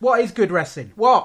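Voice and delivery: shouting. Asking the other speaker a podcast question: shouting into the microphone. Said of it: "Still doing it".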